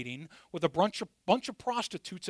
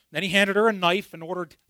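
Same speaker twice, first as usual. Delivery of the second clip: ordinary delivery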